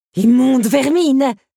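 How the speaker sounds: very high, very loud, shrill, spat out. A woman, trying to crush beetles with her fan, spits the words.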